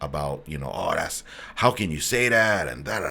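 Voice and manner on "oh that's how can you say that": indignant, outraged, complaining, scolding rant. Retelling an email from a lady who went off on him: imitating an angry complainer. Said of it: "a lady that just went off on me".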